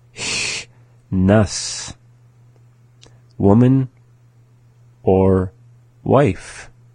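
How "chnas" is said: Nahak word chnas drawn out slowly. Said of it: "the second time slowly".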